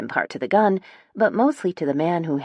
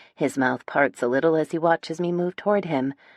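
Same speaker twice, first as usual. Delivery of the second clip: usual speaking voice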